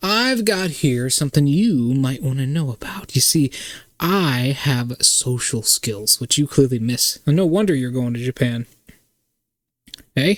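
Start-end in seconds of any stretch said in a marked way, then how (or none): 0.0-8.7 put-on lightly done, near-southern American accent. Voicing a woman who lectures the narrator, in an almost southern accent. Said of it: "in an almost southern accent".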